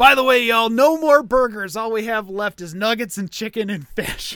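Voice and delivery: loud, high-pitched shouted yell. Retelling what the girl behind the counter yelled: imitating a yell. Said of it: "the girl behind the counter yells".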